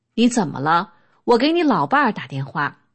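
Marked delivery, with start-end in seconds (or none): none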